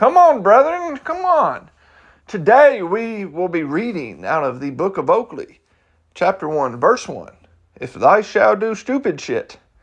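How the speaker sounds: swooping, pulpit-style preacher sermon voice. Joking that they sound like a preacher, the speaker launches into a preacher voice. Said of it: "I sound like a preacher".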